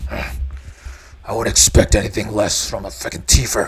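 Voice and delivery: snarled, growling tone. Narrating a man who simmers down but snarls at you: snarling. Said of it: "he just snarls at you".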